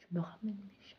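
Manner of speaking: hushed whisper, barely audible. Recounting an anonymous midnight phone call, imitating the caller's whisper. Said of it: "Mais vraiment en chuchotant".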